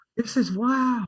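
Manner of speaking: put-on very high, loud, excited child voice, squealed. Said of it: "I was just like that excited kid".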